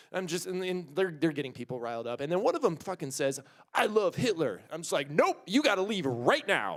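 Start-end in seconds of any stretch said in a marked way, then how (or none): 5.1-6.8 stern fatherly dad voice with swooping growl. Retelling confronting a person who said something hateful, in full dad voice. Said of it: "like full dad voice".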